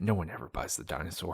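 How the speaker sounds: very quiet, low, hushed mutter under breath. Retelling what a gift shop guy said: imitating muttering under breath. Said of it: "under his breath".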